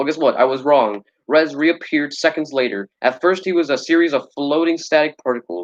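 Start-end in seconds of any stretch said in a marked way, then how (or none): none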